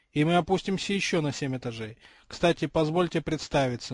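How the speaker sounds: ordinary delivery, nothing marked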